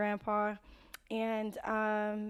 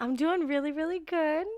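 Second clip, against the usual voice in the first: thrilled, hyped-up, pitched-up excited tone; 6 semitones higher, 6 dB louder than usual. Answering a co-host's "how are you?": hyped, excited tone. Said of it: "If you can't hear in the tone of her voice".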